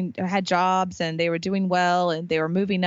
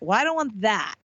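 ordinary talk, nothing marked

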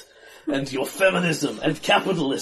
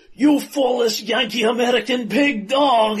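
high, villainous battle yell; 7 semitones higher, 4 dB louder than usual. An enemy yanks his rapier from the ground and leaps at the hero, shouting. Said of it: "and shouts".

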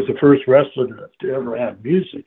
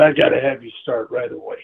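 usual speaking voice

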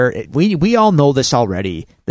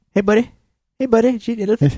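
gentle rock-creature character voice, pitched higher; 8 semitones higher than usual. Reading a question aloud to Drew, Korg voice. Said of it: "That's my best Korg".

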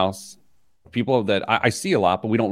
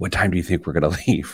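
whispered, lower and faster; 3 semitones lower than usual. Describing showing up at a door with his wife, retelling a whisper to her. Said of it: "whisper to my wife".

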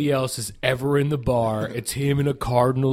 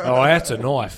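put-on Australian accent. Quoting the film line: Crocodile Dundee impression. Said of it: "your Crocodile Dundee impressions".

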